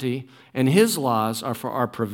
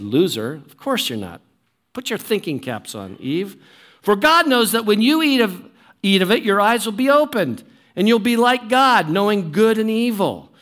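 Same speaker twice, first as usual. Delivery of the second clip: heavy, dripping sarcasm, acted out, taunting; 6 semitones higher, 3 dB louder than usual. Acting out the serpent's reply to the woman: acting out dripping sarcasm. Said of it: "dripping sarcasm".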